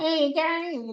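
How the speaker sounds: very high, grating North Queensland accent. Showing how people talk right up in North Queensland: imitating high-pitched North Queensland accent. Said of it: "they get really high pitched and annoying".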